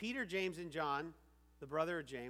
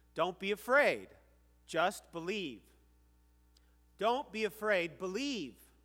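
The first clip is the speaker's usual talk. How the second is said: matter-of-fact, firm, raised voice, no pleasantries; 3 semitones higher, 8 dB louder than usual. Retelling a Gospel story, the speaker says the line the way Jesus said it: commanding. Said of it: "I'm going to say it the way he said it".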